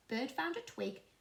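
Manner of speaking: plain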